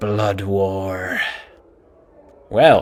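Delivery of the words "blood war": low, dramatic, drawn-out theatrical half-whisper. Reading a character's welcome speech aloud: dramatic half-whisper. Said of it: "he whispers dramatically".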